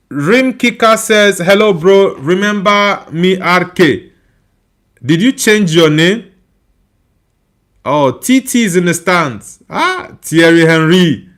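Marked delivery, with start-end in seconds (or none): none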